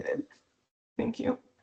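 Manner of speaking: overcome, emotional, breathy, almost whispered voice. Person personally targeted for their own money thanks the host, emotional. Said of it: "I'm sorry if I'm so emotional".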